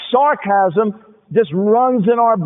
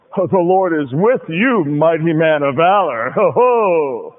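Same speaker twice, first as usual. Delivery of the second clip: mocking, very slow, stretched-out, sarcastic drawl on ho; 4 semitones lower than usual. Imagining how the angel's statement could sound: sarcastic tone. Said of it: "that could almost sound sarcastic".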